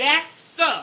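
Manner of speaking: loud shouted delivery. Told to stop mumbling and speak up, answering back: shouting. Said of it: "Don't shout at me".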